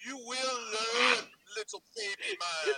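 high, slow, stretched-out Austrian accent.

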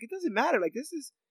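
high, happy, excited gushing. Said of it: "extremely just happy that she's in Vanya's life".

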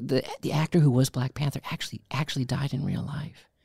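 whisper. Retelling telling a kid in a movie theater: retelling a whisper. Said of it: "and I'm trying to whisper".

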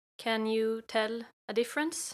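speaking with Swedish accent. Demonstrating the accent from having started out in Sweden, Swedish accent. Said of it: "A s- Swedish accent would be more um like this".

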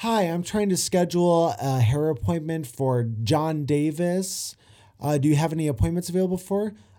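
polite, friendly, human-ish robot voice. Describing an assistant calling to book a hair appointment, imitating the Google Assistant. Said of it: "this fucking robot, this Google assistant, is going".

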